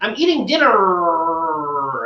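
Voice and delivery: overdone R sound, dinner drawn out. Mocking how some people over-accent their R's: over-accenting the R's. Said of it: "they all over accent the R's".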